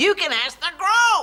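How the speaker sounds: loud shouting, yelling. Answering another speaker's worry about harboring criminals: shouting. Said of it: "Don't shout".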